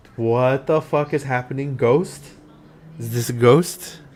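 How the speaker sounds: ordinary talk, nothing marked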